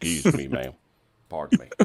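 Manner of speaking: rough, creaky, rasping voice with big pitch swoops. Imagining a Russian cavalry soldier speaking, in Sam Elliott voice. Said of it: "Sam Elliott voice".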